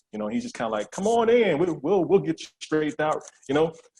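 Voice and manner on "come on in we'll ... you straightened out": folksy, welcoming country man voice, pitched up.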